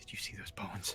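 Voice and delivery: hushed, very quiet whisper, barely there. A player's character leans over the bird and speaks, whispering. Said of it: "I go whisper over the bird like".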